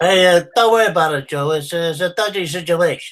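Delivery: put-on mobster voice. Given a line to do as a character, deliver it to Joe in a Tony impression. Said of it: "give me a line to do as Tony".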